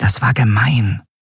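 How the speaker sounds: hushed whisper. A narrator reads Nelen whispering to her friend Endriel. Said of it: "flüsterte Nelen ihrer Freundin zu".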